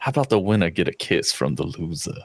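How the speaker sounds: heavy, cartoonish, laid-on Cajun accent. Quoting a favorite cartoon line: Gambit voice. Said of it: "from the X-Men cartoon where he's like".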